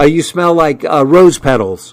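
ordinary delivery

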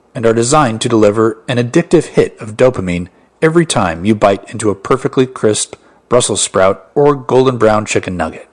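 ordinary talk, nothing marked

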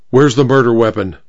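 ordinary delivery

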